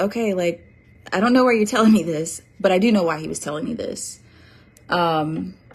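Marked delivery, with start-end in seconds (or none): none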